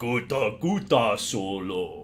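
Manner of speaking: very low, deep creature voice. Answering a viewer's joke about a Hutt with a Jabba the Hutt impression. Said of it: "There's my Jabba the Hutt impression".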